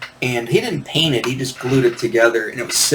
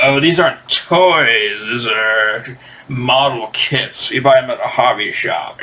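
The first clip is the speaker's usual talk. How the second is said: put-on slow, stuffy, condescending posh British accent. Imitating an older brother talking down about model kits: imitating a stuffy poncy British man. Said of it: "old, stuffy, like, poncy, you know, creepy British men".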